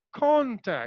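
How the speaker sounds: strong stress weighted on con in contact. Teaching English word stress, stress on con in contact. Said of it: "I'm stressing upon con, but I'm just politely delivering the word tact".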